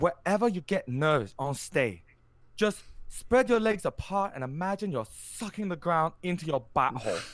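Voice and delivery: put-on Japanese accent. Quoting what a man from japan said, in an imitated japanese accent. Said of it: "I'm going to do an accent here".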